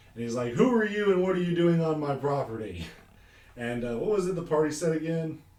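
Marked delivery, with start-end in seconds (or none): 0.5-2.9 big, booming voice, as if from inside a helmet. Recapping the party's approach, play the figure inside the helmet with a booming Patrick Warburton voice. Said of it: "it's just this booming voice coming from inside the helmet".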